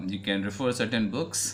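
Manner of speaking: ordinary talk, nothing marked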